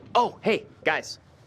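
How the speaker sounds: way too loud, high-pitched burst. Greeting the divers after another asks why so loud: loud greeting. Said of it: "why are you so loud?".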